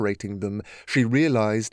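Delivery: plain reading voice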